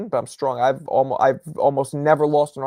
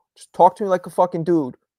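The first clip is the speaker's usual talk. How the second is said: ordinary talk, nothing marked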